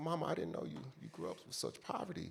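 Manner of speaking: acted crying, very quiet, breathy near-whisper. Recalling what he told his mother in her one-room house; retelling his own crying. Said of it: "I was crying and shit".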